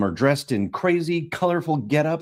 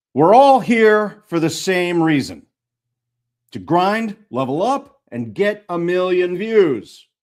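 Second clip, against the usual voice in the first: stern, loud, commanding shout; 4 semitones higher, 5 dB louder than usual. Addressing a motley crew who all sound about thirteen, shouting in substitute teacher voice. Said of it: "I shout in my best substitute teacher voice".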